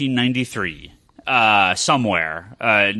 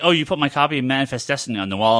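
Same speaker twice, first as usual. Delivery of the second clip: usual speaking voice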